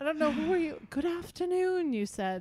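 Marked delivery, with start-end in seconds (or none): 0.9-1.9 faint, put-on English accent, pitched up. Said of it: "I didn't say it in English accent".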